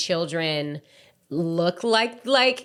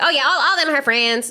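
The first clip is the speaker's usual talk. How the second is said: put-on heavy Mississippi accent, laid on thick, higher-pitched; 7 semitones higher, 4 dB louder than usual. Retelling what a mother said about her daughter: strong Mississippi accent. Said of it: "she has a very strong Mississippi accent".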